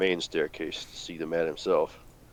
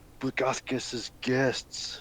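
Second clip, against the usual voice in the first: pitched-up, hushed, kept-hidden whisper; 6 semitones higher, 3 dB quieter than usual. Role-playing, crouching down beside a hiding figure to answer him: whisper. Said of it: "I'm gonna crash down and whisper too".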